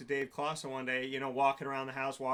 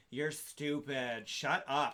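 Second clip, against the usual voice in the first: put-on drunk woman voice. Retelling what a drunk woman said in the car: imitating a drunk woman. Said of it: "and this is how she talks".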